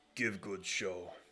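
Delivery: low, grumbling voice. Narrating a scene, voicing a character who sends the dragonborn into the arena; grumbling. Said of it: "he grumbles".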